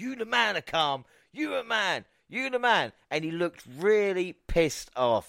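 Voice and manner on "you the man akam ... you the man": put-on high, hollered, repeated shouting. Retelling shouting at a wrestler from the front row: retelling a shout. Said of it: "I was shouting right at Akam".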